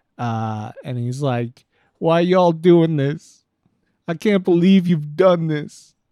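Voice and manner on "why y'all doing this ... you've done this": very loud shouting. Retelling a shop owner whose shop burned down: imitating someone yelling. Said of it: "just yelling to no one in particular".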